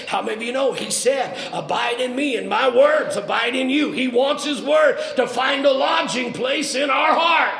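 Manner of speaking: loud, high-pitched preacher's shout, projected far.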